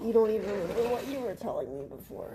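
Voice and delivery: quiet, indistinct mumbling, words muttered unclearly. Reminding the other speaker of what they said before, mumbling. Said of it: "you're mumbling".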